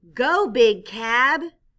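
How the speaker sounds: reading aloud loudly with bright excitement. Demonstrating reading with expression by reading a sentence aloud, with excited reading. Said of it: "I showed excitement".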